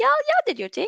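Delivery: extremely high-pitched voice.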